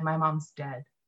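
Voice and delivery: put-on soft, dead-level, flat deadpan delivery. Retelling making a your-mom joke to Josh Wolf, his answer: imitating Josh Wolf's deadpan. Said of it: "he looked at me deadpan and said".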